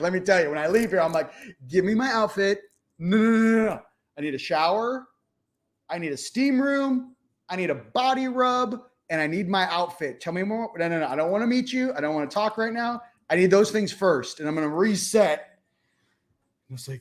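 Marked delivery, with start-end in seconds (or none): 1.7-15.5 put-on insistent, sarcastic tone, pitched up. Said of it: "I got some sarcastic things to say".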